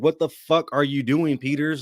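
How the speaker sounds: mock fed-up, exasperated yelled outburst. Speaker describing watching peters play on tv, retelling a yell at the tv. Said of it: "I'm yelling at my T V like".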